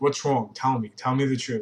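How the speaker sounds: ordinary talk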